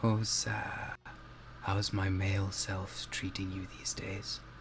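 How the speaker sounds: close, soft, hushed whisper in the ear. Voicing a character who bows low to the player, whispering. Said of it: "she just whispers in your ear".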